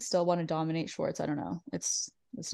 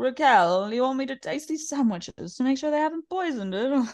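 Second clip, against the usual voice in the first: put-on drunk voice, higher; 7 semitones higher than usual. Retelling what drunk Lisa said to Raquel: imitating drunk Lisa. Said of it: "I like drunk Lisa being like".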